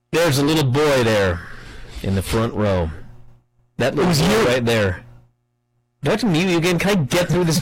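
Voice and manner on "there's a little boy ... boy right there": very low, lifeless, flat droning monotone. Act out a man who bores everyone to tears, imitating a monotone drone. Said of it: "he's monotone, just blah, blah, blah".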